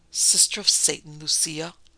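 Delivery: stage whisper with voice. The parson answers the speaker: half-whispered. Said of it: "whispered the parson".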